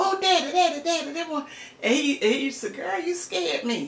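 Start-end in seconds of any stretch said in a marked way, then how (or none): 0.0-1.4 high, eager, urgent, excited calling out. Re-enacting calling out to Daddy, re-enacting excited calling out. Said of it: "he didn't say it with the excitement like I said".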